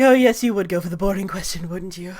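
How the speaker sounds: tired, weary sigh. Voicing a character who calls the question boring: sighing. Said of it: "She kinda sighs, like".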